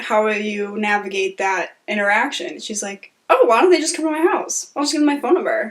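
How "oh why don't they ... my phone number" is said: fast, heavy, dripping sarcasm. Retelling a woman's answer to a question about domestic violence survivors, imitating super sarcasm. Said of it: "Like super sarcastic".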